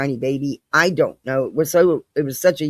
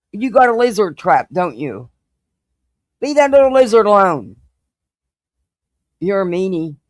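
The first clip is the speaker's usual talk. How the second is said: loud, high-pitched scolding yell; 5 semitones higher, 5 dB louder than usual. Speaker breaks off mid-talk to scold their cat: yelling at a cat. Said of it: "I'm yelling at my cat".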